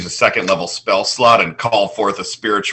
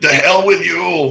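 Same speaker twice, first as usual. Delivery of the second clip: heavy put-on Austrian accent, pitched up; 9 semitones higher, 4 dB louder than usual. Offering their best Arnold Schwarzenegger line: Arnold Schwarzenegger impression. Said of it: "My best Arnold Schwarzenegger".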